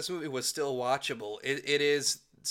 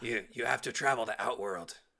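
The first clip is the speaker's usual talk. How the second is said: absurd gravelly voice, much lower; 4 semitones lower, 4 dB quieter than usual. Complaining about how the old Raiden talked: old Raiden's gravelly voice. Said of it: "Why the fuck was he talking like".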